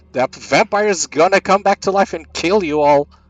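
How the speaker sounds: acted scream. Playing a character screaming a warning to Clang and Vernion: in-character scream. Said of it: "and I'm screaming".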